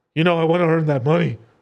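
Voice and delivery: keen, high voice. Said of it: "people are like".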